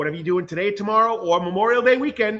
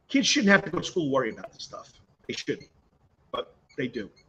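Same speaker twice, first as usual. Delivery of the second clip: emotional, fast, choking up; 7 semitones lower, 6 dB quieter than usual. Teacher opening his show by blessing the people in Uvalde, choked up. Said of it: "I'm getting choked up here".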